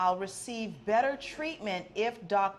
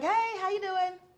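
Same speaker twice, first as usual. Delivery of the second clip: easygoing, innocuous, friendly, high-pitched voice; 11 semitones higher, 4 dB louder than usual. Showing how greeting store staff on walking in sounds: friendly high-pitched voice. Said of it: "friendly, high-pitched voice".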